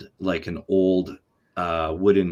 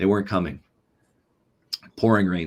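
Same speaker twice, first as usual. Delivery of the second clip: plain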